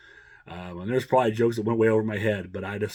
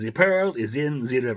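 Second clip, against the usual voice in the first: put-on thick, laid-on German accent; 3 semitones higher, 3 dB louder than usual. Recalling a movie character's code phrase, in a thick german accent. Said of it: "speaking with his thick German accent".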